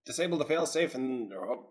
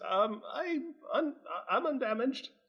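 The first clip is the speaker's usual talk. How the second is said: very high, slow, stumbling nervous voice; 12 semitones higher, 4 dB quieter than usual. Voicing a character who pokes his head out: nervous character voice. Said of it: "Tamarin pokes his head out nervously".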